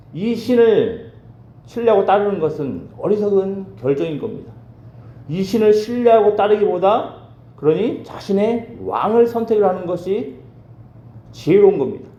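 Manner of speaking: high-pitched, taunting voice. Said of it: "랍사게의 발언 가운데 있는 그 여호와는".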